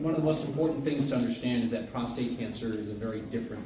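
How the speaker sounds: plain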